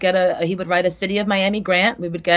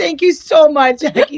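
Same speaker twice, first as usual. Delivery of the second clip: laughing through the words; 8 semitones higher, 7 dB louder than usual. Thanking Jackie as the Zoom call wraps up, laughing. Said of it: "I'm cracking up".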